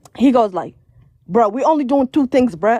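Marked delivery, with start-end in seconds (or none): 1.3-2.8 short, curt, annoyed reply with attitude, acted out. Retelling the partner's answer about their plans for the day, imitating someone with an attitude. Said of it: "like with an attitude".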